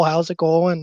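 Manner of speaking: slowed put-on Minnesota voice. Describing a hockey buddy's video, quoting him in Eric Masson's Minnesota accent. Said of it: "in his his Minnesota accent".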